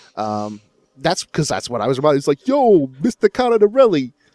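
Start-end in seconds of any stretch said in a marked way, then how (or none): 2.5-4.1 put-on thick Brooklyn accent, very high and loud. Imitating an actor's line from an old recording: thick New York John Travolta accent. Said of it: "this Brooklyn thick New York John Travolta accent".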